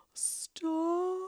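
acted-out, piercing, very high scream. Retelling how a woman holding a stop sign screamed at the car: imitating a woman screaming. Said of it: "the woman holding the sign starts screaming".

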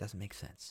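soft, unvoiced, breathed-out whisper.

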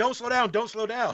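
play-acted, panicked, high-pitched screaming yells. Retelling passengers in the back seat: imitating people screaming. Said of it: "Steve and Phil are screaming".

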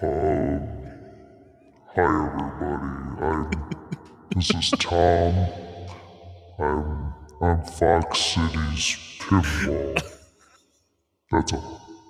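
voice electronically altered through a voice changer. Giving a plug after being asked to use a voice changer: voice changer voice. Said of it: "in that voice changer".

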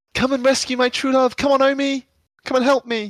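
very high, loud, pleading battle cry. During the game, a player's character turns to a party member, shouting. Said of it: "turn to Omi and shout".

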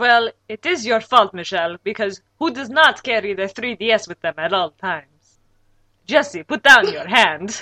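put-on vampire accent. Blaming Michelle and addressing Jesse; Dracula accent. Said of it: "will you stop that stupid accent?".

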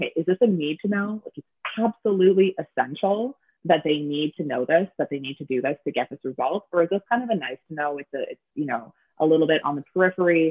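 normal talking voice

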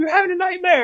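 shrill yell, pitched very high. Retelling a prank where someone started yelling: imitating someone yelling. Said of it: "started yelling".

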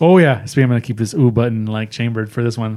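usual speaking voice

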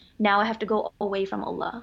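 ordinary talk

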